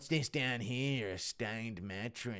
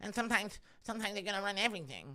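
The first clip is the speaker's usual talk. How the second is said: very high voice, rattled off fast; 10 semitones higher than usual. Speaker announces Mike Tyson noticing, then performs it: Mike Tyson impression. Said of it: "Mike Tyson noticing".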